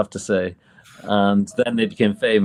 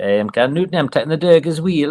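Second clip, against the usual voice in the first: put-on Ashington accent; 7 semitones higher than usual. Retelling how an uncle from Ashington said a phrase: imitating uncle's Ashington accent. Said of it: "he would say this phrase, and he was like".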